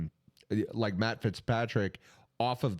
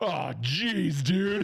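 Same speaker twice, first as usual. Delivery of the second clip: higher, unimpressed, disappointed jeer; 7 semitones higher than usual. Retelling what a crowd member said on a hot mic: imitating a fan on a hot mic. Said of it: "this guy with the microphone. He's like".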